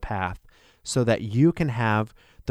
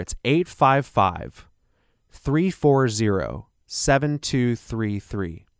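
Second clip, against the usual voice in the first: a little slower delivery. Repeating a phone number for listeners, a little slower. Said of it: "I'll say that a little slower".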